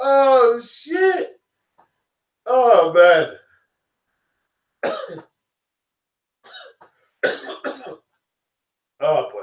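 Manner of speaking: struggling to keep composure. Mid-rant about a fighter's crowd, struggling to keep composure. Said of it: "I'm trying to compose myself".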